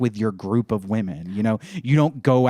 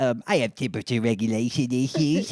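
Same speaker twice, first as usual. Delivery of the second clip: put-on storybook witch voice. Speaker voicing a witch character, witch voice like his wife's. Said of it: "That is my wife's voice".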